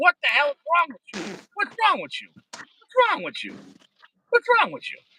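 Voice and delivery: put-on, booming-style scolding voice. Acting out God in the back seat scolding a sinner: imitating God scolding. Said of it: "He'd be like".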